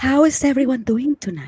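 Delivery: put-on throaty voice. Greeting everyone, imitating how Rosaline speaks on the microphone: Rosaline's microphone voice. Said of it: "how she speaks when she has the microphone".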